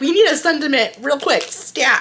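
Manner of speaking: high-pitched, loud, urgent voice. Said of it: "I'm like".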